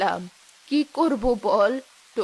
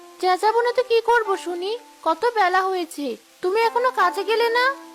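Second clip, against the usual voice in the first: shouting, higher pitch; 10 semitones higher than usual. Scolding the other for not going to work yet: yelling. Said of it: "সকাল সকাল এমন চেঁচাচ্ছ কেন?".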